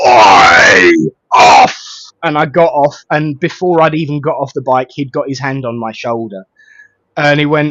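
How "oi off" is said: very deep, very loud, booming policeman shout. Retelling being stopped while biking the wrong way, booming policeman voice. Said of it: "a very booming voice".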